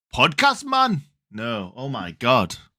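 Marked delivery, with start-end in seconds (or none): 0.2-1.1 put-on botched, high-pitched Norwegian accent. Retelling one of your life's greatest moments, try what he said in a failed imitation of Sander's Norwegian accent. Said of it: "which I'm not even going to attempt to do".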